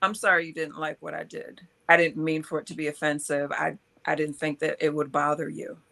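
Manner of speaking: ordinary talk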